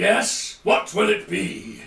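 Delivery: imposing, big voice of a giant creature. Narrating a creature with eye stalks speaking to Lucille: big booming voice. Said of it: "a big booming voice saying".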